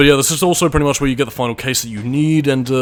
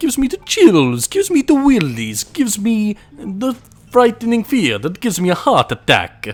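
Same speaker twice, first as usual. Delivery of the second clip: put-on Italian accent, high and swooping; 8 semitones higher than usual. Speaker commenting on a creepy area while playing, in a put-on Italian accent. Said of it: "I don't know why I'm using an Italian accent".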